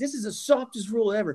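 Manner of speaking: wild, outraged, high-pitched berserk commentator rant. Retelling a color commentator's reaction to an ejection, retelling a berserk rant. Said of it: "he's going absolutely berserk".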